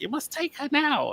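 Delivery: very high, small little witch voice. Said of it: "and like the fucking sheriff is like".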